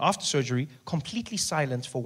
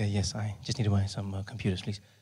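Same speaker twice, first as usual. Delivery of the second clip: whispering, much lower in pitch; 6 semitones lower than usual. Retelling buying a computer, answering a man in a shop in a whisper. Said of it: "Why are you whispering?".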